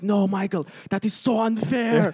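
high, screaming, yelled protest. Retelling a screamed headset complaint to the race director: imitating Toto Wolff screaming. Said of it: "screaming on the, on the headset".

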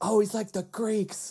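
very high, shrieking scream of a yell. Retelling a scene from the show: imitating Will Arnett screaming. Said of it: "Will Arnett just screams".

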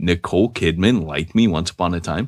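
ordinary talk, nothing marked

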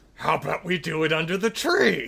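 mock delivery through gritted, clenched teeth. Recapping a show scene, quoting a character's line, retelling through gritted teeth. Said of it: "through gritted teeth".

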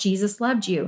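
ordinary talk, nothing marked

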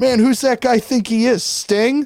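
loud mocking voice. Telling how sting walked past the band, retelling a loud remark. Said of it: "he says all loud".

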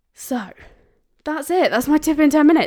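out of breath. Speaker wrapping up a ten-minute tip video for viewers, out of breath. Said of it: "I feel really out of breath".

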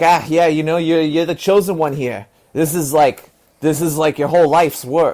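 loud, bad, laid-on Massachusetts accent. Retelling what a former pro bike racer told him: imitating a Massachusetts accent. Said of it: "with this, like, you know, Massachusetts accent".

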